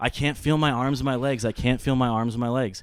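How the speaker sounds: acted-out, loud, panicked screaming. Retelling coming out of a blackout and screaming at dad: imitating own screaming. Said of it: "I'm just screaming at him".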